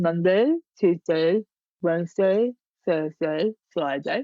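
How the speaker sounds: slow words spoken with tongue stuck out. Demonstrating a speech exercise by listing weekdays, speaking with tongue out. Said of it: "with your tongue out like this".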